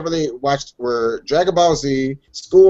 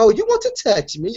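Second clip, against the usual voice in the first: put-on polite British voice, pitched higher; 6 semitones higher than usual. Joking that a naughty character talks politely: polite British Bayonetta voice. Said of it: "naughty with a polite voice".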